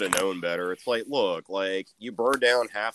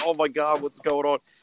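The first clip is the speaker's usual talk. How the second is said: acted fear, mock-scared voice; 7 semitones higher, 3 dB louder than usual. Retelling a guy watching someone about to blow up TNT, mock-scared. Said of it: "scared as shit".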